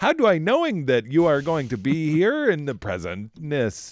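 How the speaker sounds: loud, silly put-on dumb voice with swooping pitch. Speaker showing the voice they use for saying things wrongly: dumb voice. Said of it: "That's my like dumb voice".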